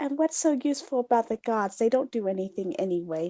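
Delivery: quiet muttering. Speaker voicing the character in a roleplay, muttering in Elvish under her breath. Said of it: "mutter in her in under her breath".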